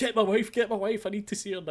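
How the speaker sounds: mock repeated screaming, high-pitched. Retelling Dean running around demanding his wife: imitating Dean screaming. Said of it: "just running around screaming at people".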